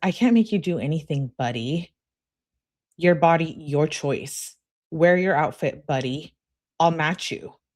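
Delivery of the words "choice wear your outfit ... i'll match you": ordinary talk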